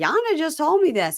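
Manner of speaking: high-pitched yelling voice. Retelling how someone yelled through a bedroom door: imitating someone yelling. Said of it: "And she's yelling, yelling, yelling".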